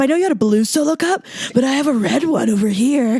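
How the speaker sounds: acted, put-on drunk man's voice. Reenacting a drunk dude approaching her sober friend at a party: imitating a drunk dude. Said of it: "Should we reenact it?".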